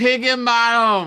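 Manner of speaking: slow, high, yelled call.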